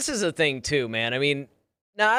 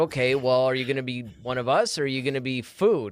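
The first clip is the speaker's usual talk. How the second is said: normal talking voice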